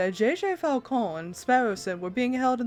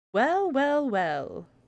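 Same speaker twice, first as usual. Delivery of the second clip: condescending, patronizing voice, higher; 4 semitones higher than usual. Arriving to find two prisoners in their cell: condescending tone. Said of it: "That condescending tone".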